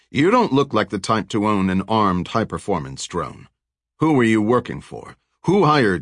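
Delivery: plain reading voice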